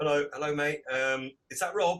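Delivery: normal talking voice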